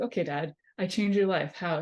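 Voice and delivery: plain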